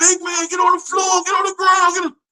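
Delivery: very high-pitched shouting. Retelling how everybody in the pod yelled at the speaker: imitating people yelling. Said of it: "everybody yelling at me".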